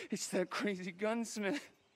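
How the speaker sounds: normal talking voice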